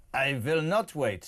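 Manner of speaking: slow, failed attempt at a Russian accent. Answering a voice note, trying a reply: bad Russian accent. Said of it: "I can't do a Russian accent".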